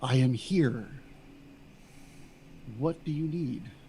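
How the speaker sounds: soft, breathy, hushed whisper. Narrator voices a voice from the darkness answering a player's pleas, whispered. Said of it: "you hear a whispered voice from the darkness".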